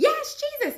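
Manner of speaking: mock shrill very high scream. Retelling a dream of seeing jesus on a cloud: imitating own screaming. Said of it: "And I'm screaming".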